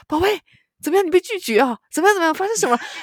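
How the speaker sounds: mock very high, very loud, eager excited gush. Retelling how the listener sounded on the phone to her, imitating an excited voice. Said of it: "你现在就那种很兴奋的声".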